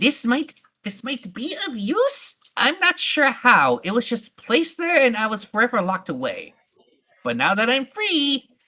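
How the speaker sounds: high, squeaky, grumpy giant rat voice. Narrating a game, the storyteller voices a giant rat handing over a book: grumpy, angry giant rat. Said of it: "you could tell this giant rat is very grumpy and very angry that it was disturbed from its slumber. It is also very hungry. / you could tell this giant rat is very grumpy and very angry that it was di".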